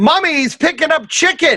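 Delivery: put-on very high, shrill top-of-lungs child scream. Retelling a child who followed him around the store: imitating a child screaming at the top of his lungs. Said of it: "He's screaming this at the top of his lungs".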